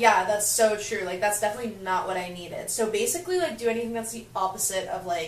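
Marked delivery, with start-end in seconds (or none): none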